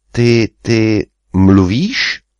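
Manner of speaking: halting, stammered, stuttering. Ferry, addressed by a deep voice, asks it a question, stammering.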